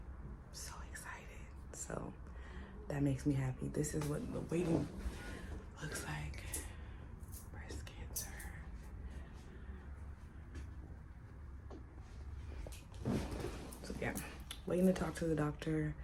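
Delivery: hushed, very quiet whisper. Waiting at a doctor's appointment with the doctor next door: whispering. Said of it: "I'm whispering because my doctor's next door".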